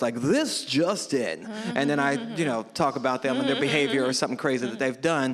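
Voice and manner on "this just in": polished news anchor delivery. Describing his News Anchor Dad skit, talking to his kids in news anchor voice. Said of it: "in my news anchor voice".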